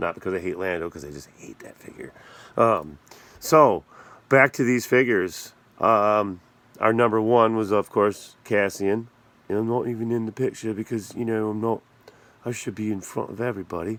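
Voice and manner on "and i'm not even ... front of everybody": put-on British accent. Voicing the Cassian action figure left out of the picture: British accent voicing Cassian figure. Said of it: "He doesn't have a British accent. I don't know why I'm doing that".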